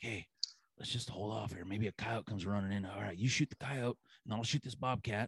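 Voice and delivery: hushed, barely there half-whisper. Retelling a hunt, quoting what was said to a partner: imitating a half-whisper. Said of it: "whispering to each other".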